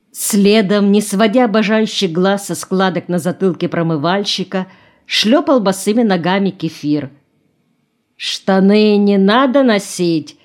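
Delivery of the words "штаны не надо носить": mocking tone, slower pace. Chenkov questions Kefir, who has followed the washer barefoot, mockingly asked. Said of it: "насмешливо спросил Ченков".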